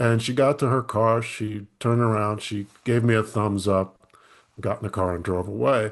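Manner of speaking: plain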